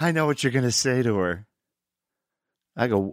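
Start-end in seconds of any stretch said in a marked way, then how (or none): 0.0-1.5 put-on giggling while talking. Telling a story, speaker quotes a man who came over still giggling, imitating someone giggling. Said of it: "he's still giggling".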